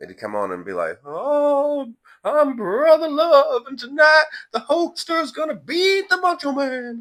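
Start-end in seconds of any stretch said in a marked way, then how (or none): 1.0-7.0 shrill booming preacher voice, drawn-out loud high "oh". Recalling wrestling gimmicks, the speaker imitates a wrestler's preacher character: weird high Brother Love voice. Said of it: "he had this weird high pitched voice like that".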